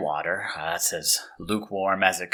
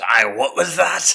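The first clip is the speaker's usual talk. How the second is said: loud, high, irate angry shout; 7 semitones higher, 6 dB louder than usual. Voicing a prison guard reacting to an insult: guard shouting. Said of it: "that guard, he shouts".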